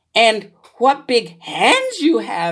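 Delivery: animated, high, swooping storybook exclamation. Little Red speaks to the wolf she calls Grandma, exclaimed. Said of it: "exclaimed Little Red".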